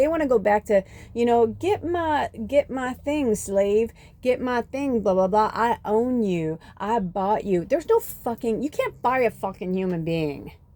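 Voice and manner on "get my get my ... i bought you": bad put-on Southern accent, much slower. Speaker acting out a quote mid-story, in a not-the-best southern accent. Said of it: "I know that's not the best accent".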